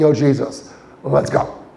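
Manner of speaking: put-on urgent call, drawn out. Retelling the disciples hurrying someone to come: imitating urgent hurrying. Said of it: "So there's some urgency".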